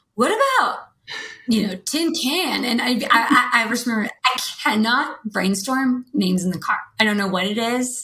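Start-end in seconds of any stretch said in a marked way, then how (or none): 0.2-2.6 cartoonish dude voice, pitched up and swooping. Retelling what Tim suggested on a car trip: impression of Tim in a dude voice. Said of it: "I like your impression of Tim".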